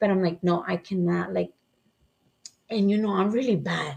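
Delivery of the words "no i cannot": put-on trembling, shaking voice. Retelling being nervous during a possible robbery: imitating own shaking voice. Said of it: "So my voice is shaking".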